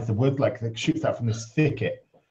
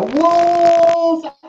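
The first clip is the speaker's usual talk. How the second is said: very high, stretched-out, drawn-out shrill scream; 6 dB louder than usual. Telling a story about a man in the woods, retelling a louder scream. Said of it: "And he screams louder".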